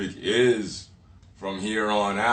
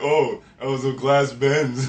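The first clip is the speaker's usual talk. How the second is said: mock sarcastic tone, higher and louder; 4 semitones higher, 4 dB louder than usual. Retelling a comment under a post: imitating a sarcastic commenter. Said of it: "all sarcastically and shit".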